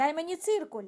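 sudden loud blurted shout. A boy struggling to speak to his deskmate in class, shouting to the whole class. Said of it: "вигукнув на весь клас Дмитрик".

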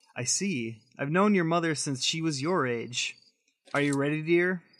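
ordinary delivery

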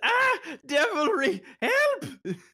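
put-on very high, pleading old woman's crone voice. Voicing the crone calling for help as she shuts the door: crone crying for help. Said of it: "so she goes".

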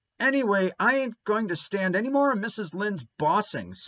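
high, spluttering, complaining outburst. Narrator reading a character's line in a story, spluttering. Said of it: "spluttered Davy".

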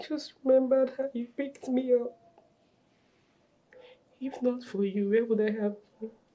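crying while talking. A girl, asked by her mother what's wrong, answers: crying while talking. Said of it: "is that why you're crying?".

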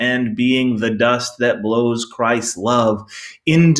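ordinary talk, nothing marked

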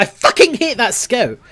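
furious venting. Playing a match against an enemy scout: angry. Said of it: "I'm so angry".

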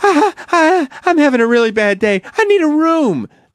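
very high, swooping, whiny, begging tone. Speaker acts out a woman begging a hotel clerk for a room, imitating a whiny woman. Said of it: "She's being all whiny".

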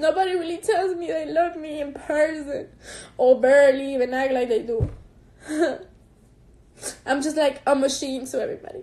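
speaking through tears. Talking to the people watching, crying while talking. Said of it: "I need to stop crying".

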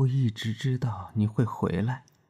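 gentle, tender delivery. A narrator reading a man's line in a story, tender. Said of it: "他温柔地说".

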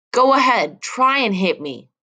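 deliberate, full, high, drawn-out yell. Narrator reads herself answering a man raising his hand to strike, yelling. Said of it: "I yelled".

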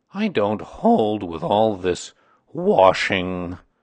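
grumbled, disapproving, complaining tone. Eeyore speaks up while Kanga and Owl talk, grumbling. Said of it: "grumbled Eeyore".

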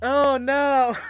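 very loud, high sobbing wail, bawling. Streamer reacting to a character's final moments in a game, bawling. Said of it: "Sorry, I'm like bawling".

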